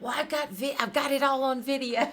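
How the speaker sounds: mock eager exclamation. Retelling calling out excitedly during a dispute at a tournament: imitating own yell. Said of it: "and I yelled out".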